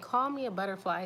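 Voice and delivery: ordinary talk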